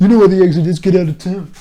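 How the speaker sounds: loud, mock outraged, dismissive tone.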